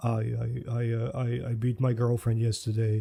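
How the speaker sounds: dry, flat, level, expressionless deadpan. Demonstrating a style of dark joke delivery: flat deadpan. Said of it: "in this kind of tone of voice, like ... like a more deadpan".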